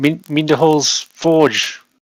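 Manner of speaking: loud, booming giant voice. Player answers an old voice asking what they seek, booming giant voice. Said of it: "I say it in giant, in a booming voice".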